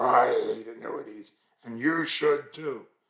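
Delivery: gravelly, rasping voice. Quoting an investment firm's founder, in his gravelly voice. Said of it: "in his gravelly voice was".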